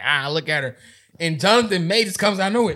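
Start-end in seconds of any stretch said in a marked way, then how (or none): 0.0-0.8 put-on jeering, mocking delivery through laughter. Retelling girls watching a fight: imitating girls laughing. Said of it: "all the other girls was laughing".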